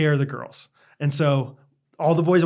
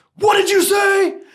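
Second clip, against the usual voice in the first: mock, very high, loud, proclaiming delivery; 6 dB louder than usual. While the group sneaks quietly through a field, Knox turns around, imitating Knox proclaiming. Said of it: "screams at this, not screams, but talks very, very, very proclaimed".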